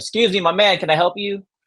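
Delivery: high-pitched yelling. Retelling calling out to a man at the package: retelling a yell. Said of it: "Yelling at him from my window".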